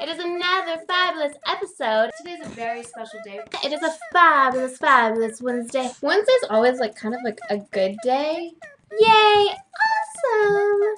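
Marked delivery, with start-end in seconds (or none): 9.0-10.8 loud, squeaky, very high-pitched cheering voice. Host opening the episode, voice squeaking. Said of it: "my voice just squeaked like crazy".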